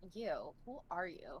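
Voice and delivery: disgusted, repulsed tone. Playing a character who confronts a staring stranger: disgusted. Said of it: "look at him, like, disgusted and be like".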